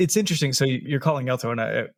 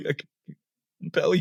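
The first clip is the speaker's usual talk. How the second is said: put-on stutter, higher pitch; 4 semitones higher than usual. Imagining a priest with a stutter trying to compel undead: imagined priest stuttering. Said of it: "Imagine a priest with a stutter".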